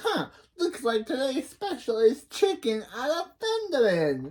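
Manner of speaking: high, swooping, sing-song character voice. The speaker voices the character Missus Wong: Missus Wong voice. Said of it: "I miss doing the Missus Wong voice".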